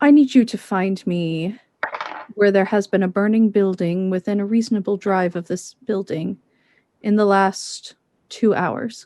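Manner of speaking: hushed, low, quiet voice. Asking in character for a search so another person can't hear: keeping voice low. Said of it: "keep my voice low enough that he can't hear me".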